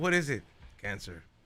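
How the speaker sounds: low, soft, grave doctor voice. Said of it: "the doctor is like".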